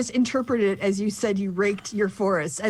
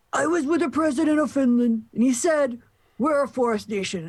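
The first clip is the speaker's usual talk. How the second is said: pitched-up, overdone, exaggerated New York accent; 5 semitones higher than usual. Asked to read out Trump's phrasing, reading it in a Trump voice that sounds too New York. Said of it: "I don't know why he sounds too New York".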